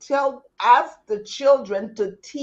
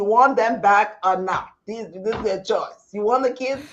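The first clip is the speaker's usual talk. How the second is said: plain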